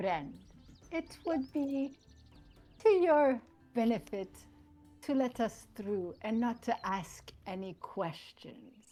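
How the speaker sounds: condescending, threatening tone. Speaking in character to a guard while tapping his cheek: condescending, threatening in-character line. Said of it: "kind of condescendingly".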